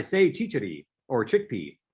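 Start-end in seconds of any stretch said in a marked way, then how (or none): none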